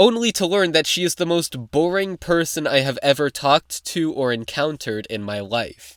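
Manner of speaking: ordinary delivery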